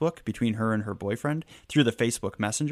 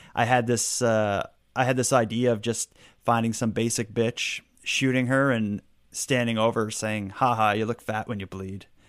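normal talking voice

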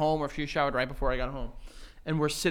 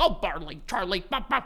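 light, teasing, playful voice; 3 semitones higher than usual. Describing how the listener talks to his dog, imitating Joe's playful voice. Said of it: "you have a bit of like a playful voice".

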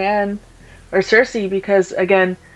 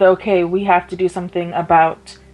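usual speaking voice

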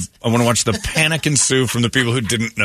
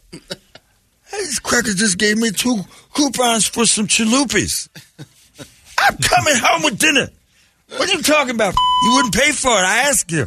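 put-on very high, sloppy drunken babbling man voice; 13 semitones higher than usual. Retelling what a drunk man said on the phone: imitating a drunk man. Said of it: "That guy was crazy drunk".

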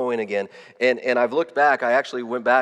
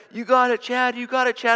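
put-on, shouted, excited, encouraging cheer; 12 semitones higher than usual. Retelling friends at a race cheering him on: imitating people screaming encouragement. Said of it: "they're screaming at me".

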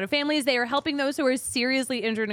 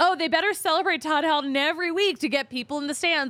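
joking tone, pitched much higher; 4 semitones higher than usual. Retelling what Harold Reynolds said about the Rockies, retelling Harold Reynolds joking. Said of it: "like kind of jokingly".

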